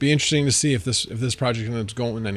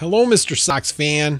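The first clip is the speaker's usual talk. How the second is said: put-on Chicago accent, louder; 4 semitones higher, 5 dB louder than usual. Greeting a sox fan who has just arrived, in your best chicago accent. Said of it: "I'll do it in my best uh, Chicago accent".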